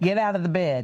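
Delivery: ordinary delivery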